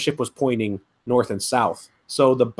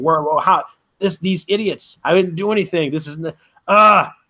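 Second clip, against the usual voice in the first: mock upset high yelling, stumbling over words; 5 semitones higher, 3 dB louder than usual. Retelling being knocked off the ship into the water: imitating his own yelling. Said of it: "I'm yelling".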